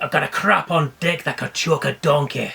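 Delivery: terrible put-on Scottish accent. After a verse mentions a fat Scot, doing a Fat Bastard impression. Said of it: "terrible impression".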